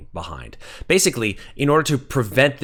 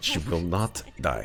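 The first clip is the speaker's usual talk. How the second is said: put-on Russian accent, said more quietly; 3 semitones lower, 7 dB quieter than usual. Voicing an undead Russian figure in a game scene: Russian accent. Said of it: "I am gonna lose the accent".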